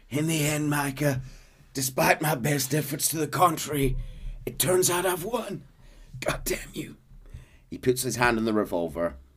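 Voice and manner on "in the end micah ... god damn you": mock wheezing on each word, pitched up. Retelling a scene, acting out Arthur's words to Micah, imitating Arthur wheezing. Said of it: "wheezing out these words".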